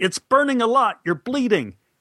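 acted, very high-pitched, barked yell. Recounting a shoot, imitating the director yelling instructions: retelling the director's yell. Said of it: "And he yelled".

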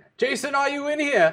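screaming at the top of his lungs. Voicing a man bursting into a room looking for his son: screaming at the top of his lungs. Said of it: "screaming at the top of his lungs".

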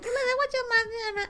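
put-on very high, fast, quick old lady voice. Describing someone's impression of an aunt, old lady voice. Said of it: "Who sounds like the mother aunt".

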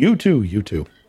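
offhand, tossed-off, casual throwaway delivery. A narrator voices a character's remark as someone walks out the door, offhand afterthought. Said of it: "just kind of an afterthought remark".

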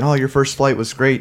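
ordinary talk, nothing marked

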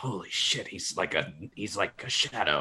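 muttering under breath. Speaking in character after turning to see a player: muttering under breath. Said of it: "under my breath".

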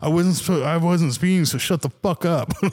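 put-on anger, pitched high. Retelling a run-in with a guy who told them to slow down, acting out being pissed. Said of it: "I was like so pissed".

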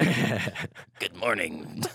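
stiff, rigid, unbending demonic tone. Asked how the Bionicles sounded, the speaker answers in a rigid Bionicles demon voice. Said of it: "they're all really rigid".

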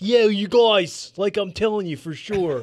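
put-on Northeast Philadelphia accent. Showing a better version of the impression: imitating Mark Callbacher. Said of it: "my impression of Mark Callbacher is more".

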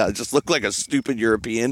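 ordinary talk

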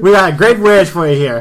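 very loud, high-pitched street hawker shout. Voicing a street vendor selling wares: street vendor shouting. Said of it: "You do not need to shout".

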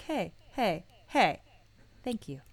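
mock heartfelt, put-on sincerity. Imitating another speaker's thanks: imitating someone being sincere. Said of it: "you got real sincere there".

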